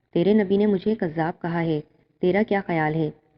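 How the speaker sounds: plain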